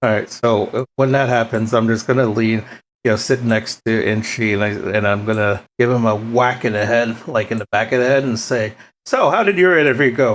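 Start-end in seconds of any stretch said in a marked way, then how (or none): 9.1-10.3 really loud, high-pitched shouting. Player's character whacks a companion on the head and asks, really loud. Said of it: "Really loudly".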